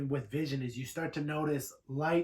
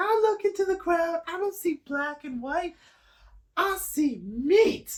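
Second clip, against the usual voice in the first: shrill, very high puppet voice at full blast; 8 dB louder than usual. Retelling what a performer's puppet told the crowd, in a high puppet voice. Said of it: "He was talking this like high voice".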